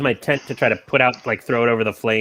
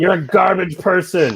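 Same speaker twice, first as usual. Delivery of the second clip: high, yelling, shouted voice; 7 semitones higher than usual. Player voicing their own sword answering a battle cry, sword yelling back. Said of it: "My sword just yells back".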